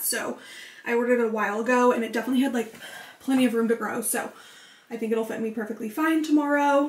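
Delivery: out of breath, halting, broken-up phrases. Talking to the camera, out of breath. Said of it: "I'm literally so out of breath these days".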